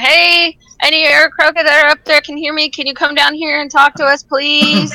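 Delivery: courteous, polite, high-pitched yell. A character steps forward and calls to any aarakocra up above, yelling up to the sky. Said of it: "start yelling".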